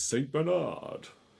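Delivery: big, showy game-show host voice, high, raspy. Quiz host saying a team's name, in a big game show voice. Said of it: "I always kind of say it in a big game show voice".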